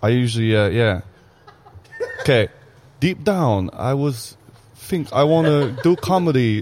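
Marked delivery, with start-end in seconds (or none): 3.0-6.6 failed put-on voice, sounding Chinese. Asked to do an impression, a comedian who does them on stage tries a failed Saren impression, sounding Chinese. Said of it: "I sound Chinese".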